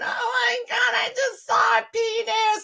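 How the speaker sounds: mock shrill, tearful panic, very high and loud. Retelling her panicked 911 call while hiding behind a gate, retelling crying on the phone. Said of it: "I'm crying on the phone".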